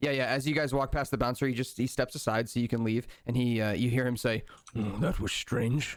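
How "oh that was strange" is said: muttered quietly under the breath. Voicing a bouncer as the party walks past: mumbled under breath. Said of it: "he just mumbles that under his breath".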